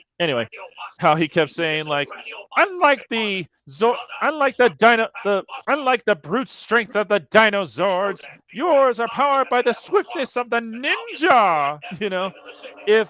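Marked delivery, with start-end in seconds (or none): 2.6-11.8 very high, sing-song, swooping voice, ninja drawn out. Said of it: "His Pee Wee Herman voice".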